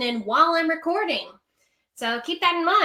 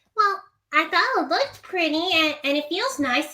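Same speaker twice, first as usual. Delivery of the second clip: young, childlike cartoon pony character voice; 4 semitones higher than usual. Acting out a requested scene of Sweetie Belle making a swimsuit: Sweetie Belle voice. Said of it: "Sweetie Belle trying to make a swimsuit".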